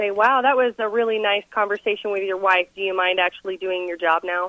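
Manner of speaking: plain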